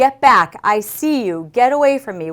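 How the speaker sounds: loud, full-chested yell from the diaphragm. Speaker demonstrates what they keep yelling during the game, yelling from the diaphragm. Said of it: "So we're always yelling".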